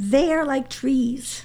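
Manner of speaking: overcome, voice full of feeling. Sharing the Psalm verse chosen when Eliana was born, the speaker continues, emotional. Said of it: "I knew I'd be emotional".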